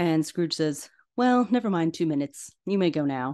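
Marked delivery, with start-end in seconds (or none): none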